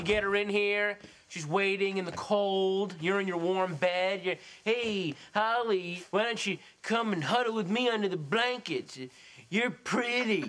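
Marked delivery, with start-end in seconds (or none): 4.6-10.5 mock-flirty, pitched higher. Accusing another man of scheming, speaker acts out his line to a woman: mock flirty come-on. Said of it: "I know your game".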